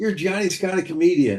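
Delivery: upbeat, reassuring tone. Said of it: "And they go".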